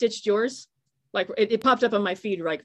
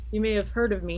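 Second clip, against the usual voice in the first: plain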